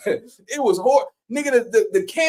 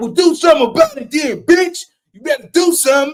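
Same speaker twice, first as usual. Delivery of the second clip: put-on grandmother voice, loud and scolding; 5 dB louder than usual. Retelling grandma's answer after a big brother ate his chips: imitating grandma scolding. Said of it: "she was like".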